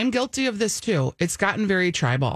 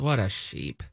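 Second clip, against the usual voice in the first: very low, quiet, under-the-breath mutter; 11 semitones lower, 5 dB quieter than usual. Retelling a passing man's remark at a coffee shop: imitating a mutter under breath. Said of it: "under his breath".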